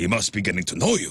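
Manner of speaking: put-on Egyptian accent, flat and matter-of-fact. Quoting what a man told him, in a put-on Middle Eastern accent. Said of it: "so matter of fact".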